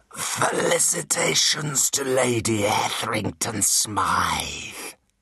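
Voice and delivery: very slow, grating creature voice like crushed glass. Reading the spoken line of a creature that is not human, in a voice of crushed glass and grating steel. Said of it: "but there was no mistaking this creature for human. It sniffed the air through slitted nostrils, opened a snake's mouth, ... it said in a voice of crushed glass and grating steel".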